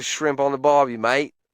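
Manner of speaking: poor, weak, put-on Australian accent. Mocking a guy sidling up to women on the street, bad Australian accent. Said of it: "I can't do an Australian accent".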